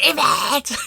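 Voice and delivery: shouting. Retelling a friend calling after someone: imitating Hayley shouting. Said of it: "She didn't know she was shouting that".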